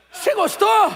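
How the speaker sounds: smiling, pleased, beaming tone. Acting out the pastor's question again for the audience: imitating a smiling, pleased question. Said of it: "com um sorriso no rosto que é dele".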